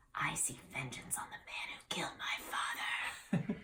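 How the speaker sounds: low, near-whispered, conspiratorial, secretive voice. Reading a choice story aloud, the hero leans in: low voice. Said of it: "in a low voice you say".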